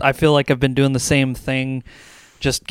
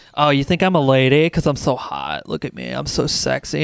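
put-on angsty fifteen-year-old voice. Retelling voicing over game characters: imitating angsty fifteen-year-old energy. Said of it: "pure, like, angsty fifteen-year-old energy".

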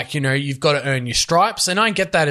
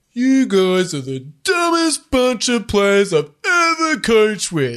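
slow, sluggish, doughy, pitched-up voice with drawn-out words; 6 semitones higher than usual. Retelling a comedy interview impersonating the coach Anthony Griffin: imitating Anthony Griffin's doughy speech. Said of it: "speaks a bit, like, doughy, where he's like".

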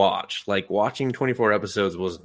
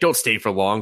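put-on gruff old-man voice. Describing a show, the speaker quotes the grandfather, imitating a gruff old man. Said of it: "he's like the gruff old dude".

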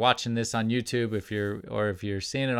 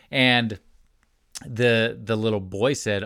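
ordinary talk

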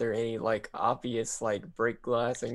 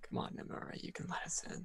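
muttered under the breath, whispered; 7 semitones higher, 12 dB quieter than usual. A character circles a statue, speaking to it under his breath: muttering under his breath. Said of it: "sort of under his breath".

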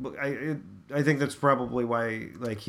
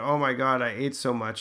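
mock groaning in a child's voice. Retelling what a kid in a video said: imitating a groaning kid. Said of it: "it just groans and said".

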